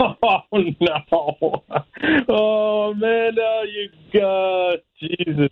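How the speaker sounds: very slow, speaking through laughter. Greeting someone on the phone, laughing while talking. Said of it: "Why are you laughing right now?".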